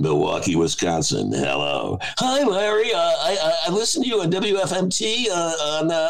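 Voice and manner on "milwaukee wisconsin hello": call-in talk-show host announcer voice. Imitating a radio host taking a caller: Larry King impression. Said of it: "he had the name of the city".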